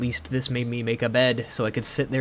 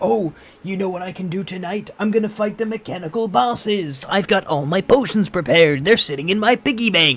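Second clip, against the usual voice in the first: loud, high, belted cartoon voice; 7 semitones higher, 6 dB louder than usual. Retelling own past plans, which came out as a Mister Krabs voice. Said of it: "it sounded like the Mister Krabs meme".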